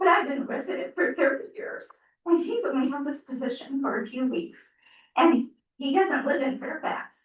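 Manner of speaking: voice on the edge of tears. A thirty-year resident speaking out to the community and town, teary. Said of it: "I get teary".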